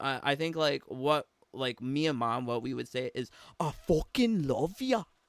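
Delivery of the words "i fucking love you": best-effort attempt at a northern English accent. What the speaker and their mom would say: attempted northern English accent. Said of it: "That's all we can do. That's that's the best of our northern accent".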